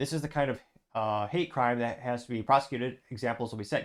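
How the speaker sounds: usual speaking voice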